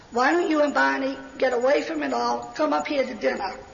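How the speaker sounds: usual speaking voice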